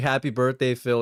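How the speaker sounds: ordinary delivery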